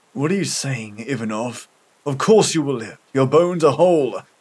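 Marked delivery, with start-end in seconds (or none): none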